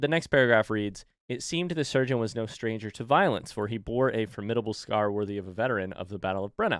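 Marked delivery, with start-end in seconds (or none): none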